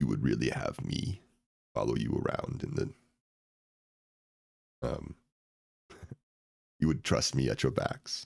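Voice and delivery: raspy, rough-edged voice, sad and defeated. Voicing a character who looks up at the party, in a raspy character voice. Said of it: "He looks kind of sad and sort of defeated".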